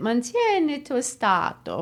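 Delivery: phrase said with native Italian pronunciation. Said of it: "your Italian accent a workout".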